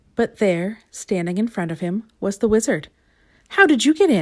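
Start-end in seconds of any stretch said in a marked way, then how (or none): 3.5-4.2 shocked, high, gasped. A narrator reads a character finding the Wizard in front of him, gasped question. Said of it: "gasped Mister Mean".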